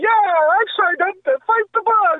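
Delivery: beaming, very high, all-happy commercial-style cheer. Imagining a guy in a random commercial, putting on an all-happy voice. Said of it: "it'll have some guy all happy like".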